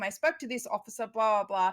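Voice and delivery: ordinary talk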